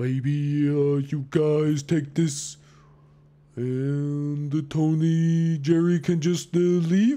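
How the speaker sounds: timid, meek, slow and drawn-out. Game master voicing a character offering a bag to the players, meek and slow. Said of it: "very slowly, meekly starts offering".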